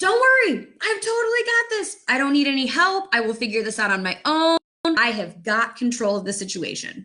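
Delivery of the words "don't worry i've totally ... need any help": insistent shout-back, dismissive. Acting out own imagined reply to a first responder: acting out shouting back. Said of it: "I shout back and say".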